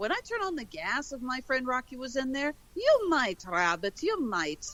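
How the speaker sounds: inconsistent, swooping put-on Irish accent, all over the place. Retelling a scene from the cartoon Bugs and Thugs, the speaker quotes it in an inconsistent Irish accent. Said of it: "my Irish accent is all over the".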